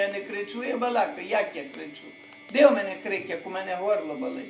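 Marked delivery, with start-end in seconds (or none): none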